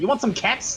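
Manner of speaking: aggressive, pushy hard-sell delivery. Joking that a name sounds like a cereal brand: said aggressively. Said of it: "You said that really aggressively".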